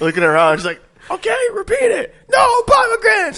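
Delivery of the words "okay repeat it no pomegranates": play-acted, very high screaming teacher voice. Retelling a story about a teacher at her students, retelling a teacher's screaming. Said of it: "she's screaming at her at her at her students".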